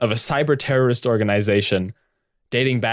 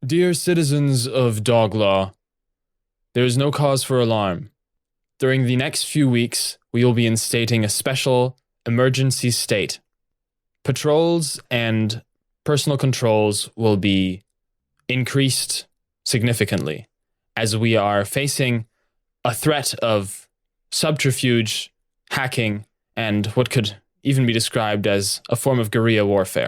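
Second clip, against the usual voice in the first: normal talking voice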